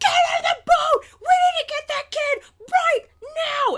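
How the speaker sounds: absolutely furious screaming, very high. Retelling how the guide screamed at the group in the boat, imitating a furious scream. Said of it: "our guide just started screaming at us, like absolutely furious".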